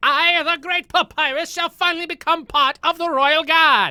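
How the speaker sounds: very high, loud character voice. Showing the Papyrus voice inspired by watching Jack: Papyrus voice. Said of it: "my Papyrus voice".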